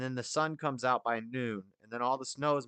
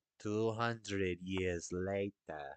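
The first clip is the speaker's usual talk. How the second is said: put-on French accent, low and soft; 5 semitones lower, 6 dB quieter than usual. Announcing a joke narration line, then delivering it in a French accent. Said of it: "In a French accent".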